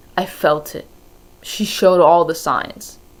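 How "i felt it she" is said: usual speaking voice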